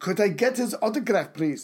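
put-on German accent on English. Joking aside after a passage about germany: put-on german accent. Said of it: "I don't know why I'm doing German accent".

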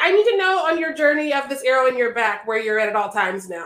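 normal talking voice

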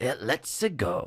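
slight Italian accent. Describing how Mario sounds in the movie trailer: subtle Mario accent. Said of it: "it's just like a subtle Mario accent".

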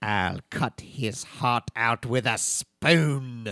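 very slow, deliberate delivery, every word drawn out.

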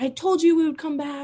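wild, high, excited shouting. Recalling a comeback game, acting out his past self: retelling own yelling. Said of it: "I was like yelling".

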